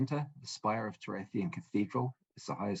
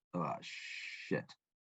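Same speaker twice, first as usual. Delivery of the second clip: muttered, quieter, lower pitch; 5 semitones lower, 7 dB quieter than usual. Narrating a scene to players, voicing Paladimir muttering under his breath. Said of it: "hear him under his breath".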